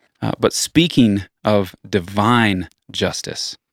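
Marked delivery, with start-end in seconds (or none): 1.9-3.5 "divine" stressed, said slowly. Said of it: "emphasis on divine".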